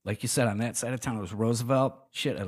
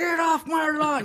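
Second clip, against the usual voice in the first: put-on high, drawn-out, grumpy, crabby old-man yell; 5 dB louder than usual. Joking about wanting to be a crabby old man, mock crabby old man yelling. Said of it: "I wanna be a crabby old man".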